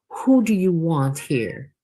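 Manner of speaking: cold, looming, menacing, threatening. Standing threateningly over the narrator, a man confronts them in a menacingly quiet voice. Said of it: "He asked in a menacingly quiet voice".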